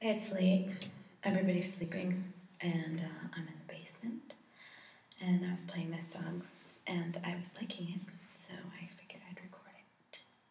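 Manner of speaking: quiet whispering. Late at night in the basement, recording while everybody sleeps: whispering. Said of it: "I don't know why I'm whispering".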